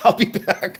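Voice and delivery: action-film killer robot cyborg voice. Quoting the Terminator line again in Terminator voice.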